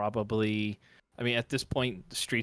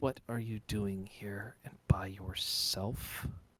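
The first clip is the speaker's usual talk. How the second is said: slow woman's voice; 6 dB quieter than usual. Game master voices a voice the player hears in their head: female voice. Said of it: "It's a female voice goes".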